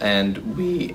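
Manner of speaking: slow, cracking voice breaking mid-phrase. A speaker presenting research on early human footprints, voice cracking. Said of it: "my voice cracked".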